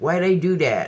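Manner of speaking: put-on American accent. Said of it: "he had this accent".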